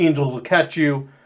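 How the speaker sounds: ordinary talk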